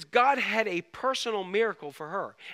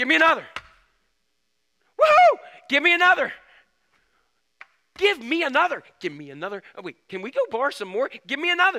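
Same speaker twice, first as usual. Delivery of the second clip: put-on giddy, eager, excited, swooping sing-song; 5 semitones higher, 6 dB louder than usual. Speaker acts out the woman as the vessels fill, acting out an excited woman. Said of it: "she's getting excited now".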